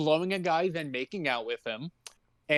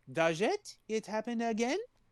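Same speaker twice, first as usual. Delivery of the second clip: put-on French accent, higher and quieter; 6 semitones higher, 6 dB quieter than usual. Retelling a story, quoting her friend Marielle, in an attempted French accent. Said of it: "I'm trying to like do a French accent".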